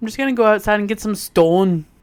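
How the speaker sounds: imitated Canadian accent. Quoting a husband's remark, the speaker uses a canadian accent. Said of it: "his Canadian was definitely coming out".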